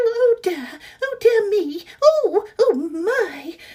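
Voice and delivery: high, very slow, drawn-out British mouse voice. Actor recalling a role she auditioned for, little british mouse voice. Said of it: "kind of little British mouse".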